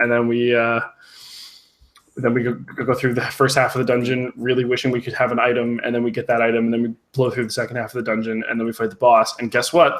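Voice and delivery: ordinary talk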